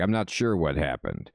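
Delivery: dazed, muddled, disoriented pirate voice. Reading a game character's lines aloud: disoriented pirate voice. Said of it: "He's so disoriented".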